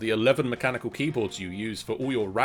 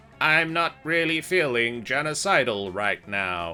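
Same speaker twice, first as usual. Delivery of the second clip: grating robot voice like grinding gears and scraping metal. Game master voicing the robot Destructon after a command, in a Destructon grating-steel robot voice. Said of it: "says Destructon in a voice of grating steel and grinding metals".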